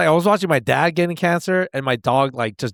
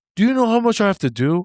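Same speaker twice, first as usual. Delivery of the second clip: mad, griping, pitched-up angry voice; 5 semitones higher than usual. Retelling what he said when mad during an argument: retelling his angry complaint. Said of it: "he was mad".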